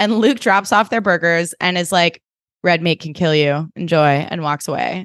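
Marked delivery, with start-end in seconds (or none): 2.6-4.1 put-on deadpan delivery. Retelling a scene, the speaker quotes Luke dropping off burgers: retelling Luke's deadpan line. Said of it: "Deadpan king".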